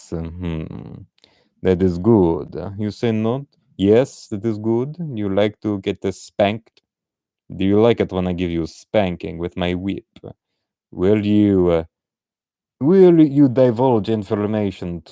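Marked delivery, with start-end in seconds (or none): 1.6-15.0 fake, put-on Russian villainess accent. Imagining a Russian Hydra woman questioning someone, put-on Russian accent. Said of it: "Maybe she is Russian, and she wants you to hail Hydra like this".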